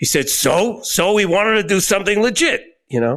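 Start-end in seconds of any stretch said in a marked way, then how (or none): 0.3-2.6 rough, gravelly wiseguy voice pitched a touch high. Retelling an interview, quoting what Morris said, imitating Morris's gravelly voice. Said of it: "who had this gravelly voice".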